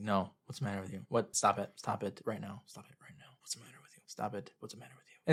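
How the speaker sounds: unvaried, repetitive, flat, soft monotone. Retelling a scene where he keeps repeating himself to a crying girl, imitating a monotone voice. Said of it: "Like he's really monotone".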